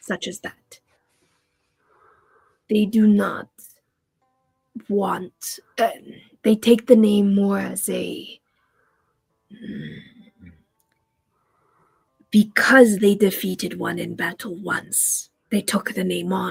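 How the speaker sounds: speaking quietly. Voicing a character who leans forward to say something distasteful: lowered voice. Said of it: "he doesn't wanna say it so loud".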